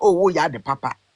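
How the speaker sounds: plain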